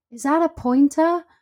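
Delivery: mock yell, very high and shrill. Retelling a man shouting from his car across traffic to a dog walker; imitating a shout. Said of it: "shouted across like four lanes of traffic".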